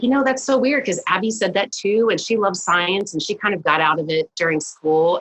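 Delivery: ordinary talk, nothing marked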